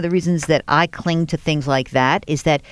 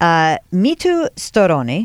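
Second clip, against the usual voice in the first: put-on Italian accent. Host saying the guest's name aloud, in an Italian accent. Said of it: "I'm going to say with an Italian accent".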